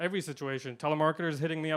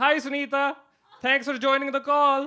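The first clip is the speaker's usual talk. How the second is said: very high, loud put-on Indian accent; 10 semitones higher, 7 dB louder than usual. Retelling greeting Sunita on a work call, in an Indian accent. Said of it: "I get an Indian accent if I'm talking to somebody else who has an Indian accent".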